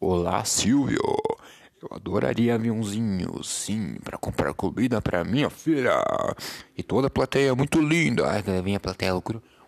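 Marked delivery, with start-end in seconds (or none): 0.0-8.3 deep, low, thick voice. Retelling a TV show bit, imitating the off-screen commentator: deep voice imitating Lombardi. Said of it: "era uma voz grossa, assim".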